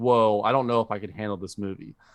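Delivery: ordinary delivery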